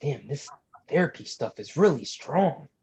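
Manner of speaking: stage-whispered aside, pitched high. A player's character whispers an aside to a companion, whispered aside. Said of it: "whisper to Varings".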